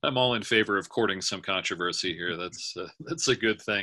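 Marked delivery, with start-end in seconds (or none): 2.4-3.8 laughing while speaking, slower pace. Webinar speaker taking questions, laughing.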